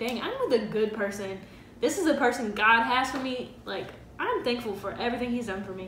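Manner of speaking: usual speaking voice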